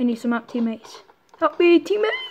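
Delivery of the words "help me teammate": high voice cracking and breaking on the words. A player calls out to teammates for help, voice cracking. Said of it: "my voice just cracked".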